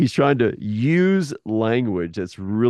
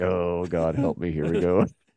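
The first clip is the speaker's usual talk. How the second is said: put-on mutter under the breath; 4 semitones lower, 3 dB quieter than usual. Retelling a man's reply when the king presses him, acting out a mutter under breath. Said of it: "Under his breath".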